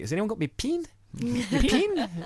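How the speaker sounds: put-on very high, sing-song New Zealand accent, pen as pin. Imitating a woman handing out the sign-up clipboard on the Kiwi bus, New Zealand Kiwi accent. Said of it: "it's Kiwi ... weird pronunciations".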